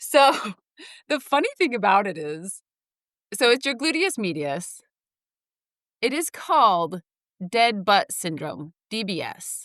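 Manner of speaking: suppressed laugh, barely held back. Telling listeners a story about their own injury, holding back a laugh. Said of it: "I'm trying not to laugh".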